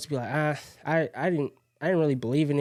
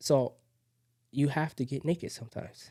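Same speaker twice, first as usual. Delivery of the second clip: hushed whispering voice, quieter; 4 dB quieter than usual. Telling listeners to be open with people, with the window open: whispering. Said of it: "I'm, like, whispering when I say that".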